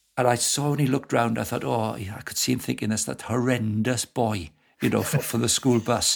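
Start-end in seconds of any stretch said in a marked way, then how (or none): none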